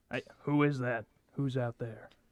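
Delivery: rough, gruff, weary and tired voice. Narrating a voice calling from inside an old mobile home, gruff and tired. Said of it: "kind of a gruff, tired voice from inside goes".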